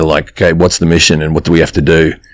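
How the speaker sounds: low put-on Australian voice. Describing a film scene to friends, in a deep Chris Hemsworth Australian voice. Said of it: "he's doing that Australian voice that's really deep down there".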